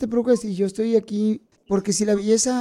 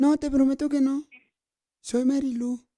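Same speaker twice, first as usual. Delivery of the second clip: put-on female voice, higher; 4 semitones higher, 4 dB quieter than usual. Prank calling a masseuse for women, fake woman's voice. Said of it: "estás fingiendo la voz".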